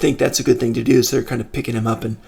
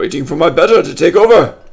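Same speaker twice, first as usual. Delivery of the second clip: loud, higher-pitched yell; 5 semitones higher, 7 dB louder than usual. Voicing a mage answering a traveler across the bar: yelling back. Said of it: "And he kinda yells back".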